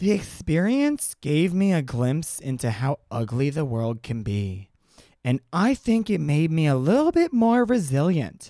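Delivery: slow, deliberate, measured delivery. Retelling a quote and performing it as an impression: Ivanka Trump impression. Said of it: "Do you like my Ivanka impression?".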